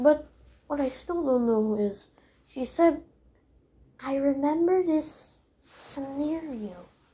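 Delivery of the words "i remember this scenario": slow, drawn-out put-on character voice. Speaker repeats what Circus Baby said, in Circus Baby's voice. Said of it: "I was just mimicking Circus Baby's voice".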